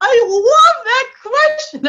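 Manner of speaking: very excited. Reacting to a question just asked: overexcited. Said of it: "I'm getting too excited".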